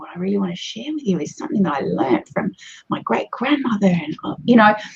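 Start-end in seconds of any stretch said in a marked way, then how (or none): 0.0-3.9 hushed, intimate, confiding whisper. Coaching on how to vary a presentation, demonstrating an intimate whisper. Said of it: "You might whisper, get a bit more intimate".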